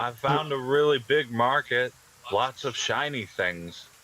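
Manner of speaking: high turtle voice, laid on thick. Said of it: "I have a very thick turtle accent".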